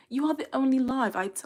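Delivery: attempted London accent. Reading a viewer's chat message aloud, imitating a London accent. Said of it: "Let me stop trying to imitate the".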